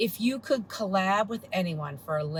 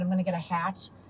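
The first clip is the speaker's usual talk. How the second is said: ordinary talk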